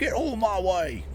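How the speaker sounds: terrible put-on Australian accent. Playing a driving game, telling another driver to move, terrible Australian accent. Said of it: "That was a terrible Australian accent".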